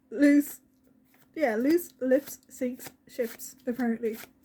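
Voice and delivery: words spoken with laughter spilling through. Reading out a message, then apologising for laughing: laughing while talking. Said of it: "I'm sorry that I'm laughing so much".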